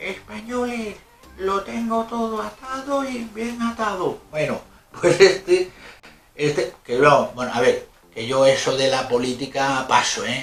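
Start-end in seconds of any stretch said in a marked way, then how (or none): 0.0-4.2 very high, shrill, squeaky, piping little whistle voice. Quoting what a small man said to Spaniards long ago; squeaky piping voice. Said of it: "con voz de pito".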